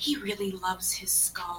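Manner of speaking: very high, soft, hushed half-whisper. A character leans in to a companion and half-whispers. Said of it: "just kind of whisper".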